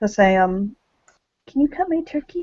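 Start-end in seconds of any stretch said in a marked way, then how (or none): 1.5-2.4 tiny little voice, very high-pitched and soft. Acting out what she'll say to him, in her little voice. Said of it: "she'll say in that that little voice that she says".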